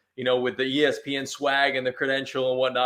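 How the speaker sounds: plain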